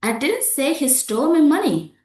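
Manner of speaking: didn't punched high and loud. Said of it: "For example".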